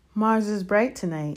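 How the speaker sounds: ordinary delivery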